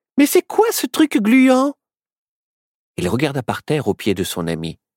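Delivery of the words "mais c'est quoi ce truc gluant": very high-pitched, excited exclaiming. Narrator reads a female character breaking into her friend's thoughts: exclaiming. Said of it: "qui s'exclama Hé hey".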